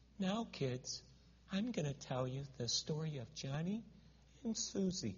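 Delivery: the quietest, soft storytelling voice. Retelling how a little lady told the kids a Bible story, in a very quiet voice. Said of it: "sit down with the quietest voice".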